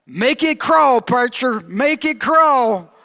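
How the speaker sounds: high, mock whole-crowd call-back shout. Retelling how the congregation shouted back to the preacher, retelling congregation shouting back. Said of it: "everybody would shout out".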